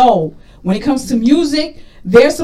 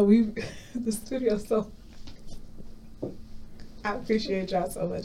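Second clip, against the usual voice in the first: emotional, close to tears, much quieter; 2 semitones lower, 16 dB quieter than usual. Looking at the studio team and thanking them, getting teary. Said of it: "I'm getting teary because I'm just getting emotional".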